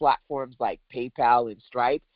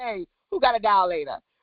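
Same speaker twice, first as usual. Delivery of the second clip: put-on Brooklyn girl accent, much higher; 6 semitones higher than usual. Telling the audience how the speaker used to ask for one, Brooklyn girl accent. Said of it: "I just be like".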